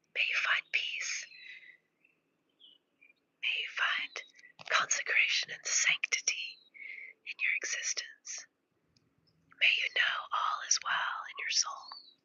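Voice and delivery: soft whisper. Speaking to a viewer holding the phone up to their ear, whispering. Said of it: "I'm whispering into your life right now".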